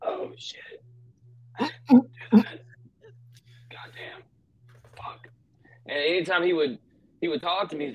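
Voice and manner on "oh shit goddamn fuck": put-on old man voice, much higher, slower. Imitating how his late grandfather sounded when talking, imitating grandfather's old man voice. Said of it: "I always go with like my old man voice".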